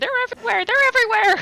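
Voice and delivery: high-pitched, panicked screaming. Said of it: "start screaming over and over again".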